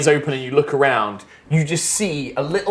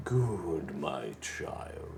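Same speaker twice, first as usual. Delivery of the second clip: charming yet terrifying, very low, soft, hushed menace; 12 semitones lower, 16 dB quieter than usual. Narrator voicing the voice heard as the power of the Nine Hells floods in, deep, charming, terrifying voice. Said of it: "deep, charming, soothing, but also terrifying voice".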